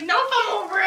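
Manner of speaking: put-on angry voice. Retelling how the mother answered on the ride home: imitating someone pissed off. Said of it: "She was pissed".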